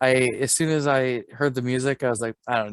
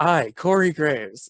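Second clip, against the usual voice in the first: grand, proclamation-style announcing delivery; 3 semitones higher, 3 dB louder than usual. Retelling a wrestling commentator's call at a match: Corey Graves impression. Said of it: "my favorite part was him going".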